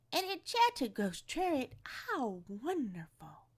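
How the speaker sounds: excited, bubbly, high, swooping duck voice. Narrator reading a story voices the duck's delighted reply, excited duck voice. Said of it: "[name] quacked. / Bright-eyed, [name] wiggled her tail feathers. "I want to help find the source, too." [name] laughed. "What can you do?" "I can shrink. It allows me to get into small places to hide".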